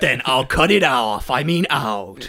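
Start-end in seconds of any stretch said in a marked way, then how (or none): 0.0-1.3 movie trailer announcer voice. Voicing Tommy after being told to stop the jokes, movie trailer voice for Tommy. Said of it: "I accidentally did movie voice for Tommy".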